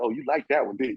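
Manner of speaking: put-on playful, teasing manner. Retelling how a player taunted defenders after scoring: imitating Ricky Pierce trash talking. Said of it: "Ricky Pierce would talk some trash to you".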